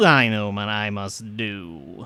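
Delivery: very loud, very slow chittering creature voice. Voicing a creature that then skitters to the door: chirping, chittering voice. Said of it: "chirping and chittering intonation".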